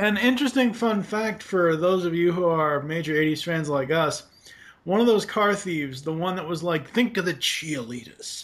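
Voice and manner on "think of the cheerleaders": put-on New York accent. Quoting a car thief from a show: imitating a new york accent. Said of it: "the New York accent".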